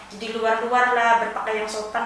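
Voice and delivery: ordinary talk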